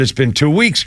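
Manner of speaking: ordinary talk, nothing marked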